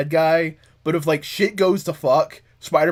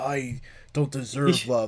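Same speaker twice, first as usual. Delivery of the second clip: put-on brooding voice, lower and quieter; 4 semitones lower, 8 dB quieter than usual. Acting out Kane in an imagined comic scene: brooding Kane voice. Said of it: "sometimes I revert back to my cloning brooding age".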